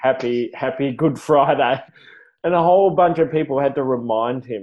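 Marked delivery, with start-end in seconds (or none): none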